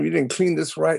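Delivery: put-on high-pitched screaming, condescending scolding tone. Son retells professors yelling at his father at work; imitating someone yelling. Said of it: "they would scream and yell".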